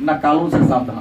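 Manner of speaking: ordinary talk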